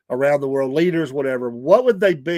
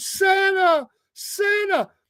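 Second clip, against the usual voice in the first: put-on very high child voice calling out. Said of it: "all the kids are going".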